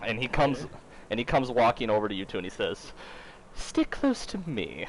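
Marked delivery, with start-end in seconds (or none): 3.5-4.9 feminine voice, much higher. Narrating, a disguised man back in his woman's form speaks to the two players: womanly voice. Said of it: "in his womanly voice".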